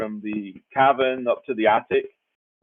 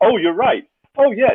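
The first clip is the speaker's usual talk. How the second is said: put-on eager, upbeat, high, loud, super-positive voice; 9 semitones higher, 5 dB louder than usual. Retelling how Claude answers: imitating super positive Claude. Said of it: "He's so super positive".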